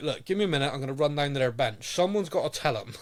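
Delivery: exasperated, frustrated voice. Retelling how Ali McCoist sounded on commentary: imitating Ali McCoist, frustrated. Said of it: "you could almost hear Ali was almost like".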